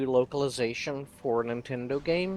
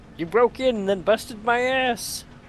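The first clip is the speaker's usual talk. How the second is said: squeezed, high-pitched and loud voice; 10 semitones higher, 7 dB louder than usual. A character answers the other man in their argument, in a Kermit the Frog-like voice. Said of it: "Why does it really sound like Kermit".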